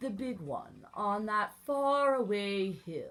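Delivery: ordinary delivery, nothing marked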